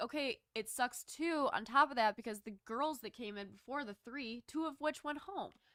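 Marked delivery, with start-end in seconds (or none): none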